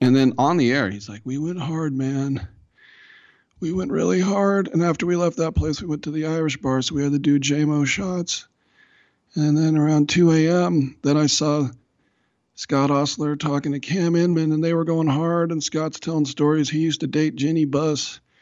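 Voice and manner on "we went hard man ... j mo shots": wrecked, strained voice pushed higher in pitch. Retelling what a radio colleague said on air: imitating Greg Papa's destroyed voice. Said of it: "his voice was like this".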